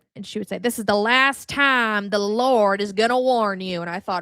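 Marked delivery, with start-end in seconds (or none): 0.6-3.8 put-on slow, drawn-out Southern accent. Quoting a woman from the South and her repeated warning, in a Southern accent. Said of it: "So she would do the accent".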